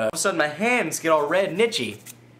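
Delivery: ordinary delivery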